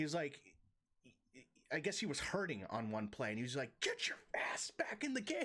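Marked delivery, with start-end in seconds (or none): 3.8-5.4 hushed, commanding, barked whisper. Retelling what he yelled at a hurting player, retelling barked orders. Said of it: "he's just barking orders".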